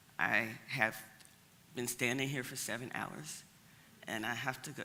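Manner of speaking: low, hushed half-whisper under the breath. Retelling a man standing in formation answering her, half-whispering. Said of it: "He's whispering too".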